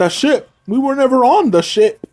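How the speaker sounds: put-on clumsy, butchered Scottish accent, pitched very high. Retelling what a Wrecker says about the ship: bad Scottish Wrecker impression. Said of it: "with the Scottish accent that I'm gonna try to do".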